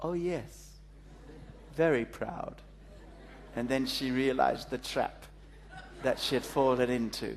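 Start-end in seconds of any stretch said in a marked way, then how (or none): 0.0-2.6 mock smug, complacent, self-satisfied, self-congratulating tone. Retelling a woman's answer after being told she must be proud, imitating her smug reply. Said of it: "And she said smugly".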